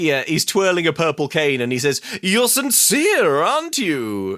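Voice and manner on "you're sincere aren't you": high, swooping, mystical, wizardly lilt. Retelling what a man in a story says to Zoe, in a wizardly voice. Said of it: "in a sort of wizardly way".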